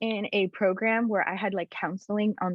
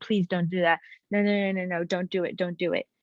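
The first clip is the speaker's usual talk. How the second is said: mock crying, pleading. Retelling begging a man not to report it up the chain of command, tearful begging. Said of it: "I start bawling my eyes out and I'm begging him".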